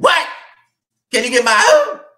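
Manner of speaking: shrieked high and loud, swooping. Acting out a phone call, answering as Wicked Witch of the West voice. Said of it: "The wicked witch of the west".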